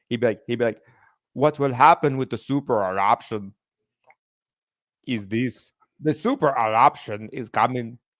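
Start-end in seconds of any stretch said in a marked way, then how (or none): 1.3-7.9 put-on comic documentary narrator voice with Austrian accent. Recalling a man in a school documentary about super volcanoes: funny accent. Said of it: "this guy with a funny accent".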